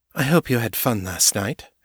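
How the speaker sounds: ordinary delivery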